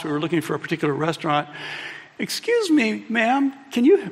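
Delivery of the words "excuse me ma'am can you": put-on extra polite friendly voice, high and slow. Retelling a friend asking a woman for help while lost: imitating friend's smiling voice. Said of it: "Really nice voice".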